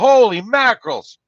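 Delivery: shrill, very high shrieking outburst. Retelling how she screamed during an exorcism: imitating someone screaming. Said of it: "she started screaming, like".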